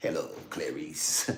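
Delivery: soft, breathy whisper, all breath. Retelling the scene where Hannibal Lecter talks to Clarice: Hannibal Lecter voice. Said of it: "Hannibal Lecter was behind the".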